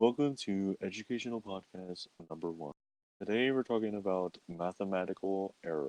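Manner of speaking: soft, quiet, dead-level monotone podcaster drone. Making fun of educational podcasts with the other speaker, monotone educational podcaster voice. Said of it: "that's how they they talk monotone as hell".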